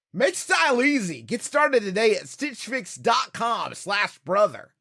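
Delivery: peppy, energetic commercial-style read with swooping pitch. Showing how to voice an ad line: lively upbeat energy. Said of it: "I try to make it sound like energy, like something you'd want to do".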